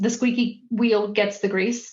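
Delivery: ordinary talk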